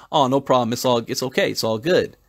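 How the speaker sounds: ordinary talk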